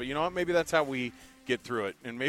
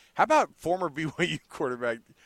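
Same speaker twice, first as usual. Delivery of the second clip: talking through light, chuckling laughter; 4 semitones higher, 4 dB louder than usual. Bringing up a former quarterback's game, laughing while talking. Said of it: "I can't say it without laughing".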